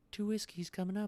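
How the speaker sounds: soft-spoken and very high-pitched voice. Narrating a scene, the speaker voices the woman behind the bar in a very soft voice. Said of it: "in a very soft voice".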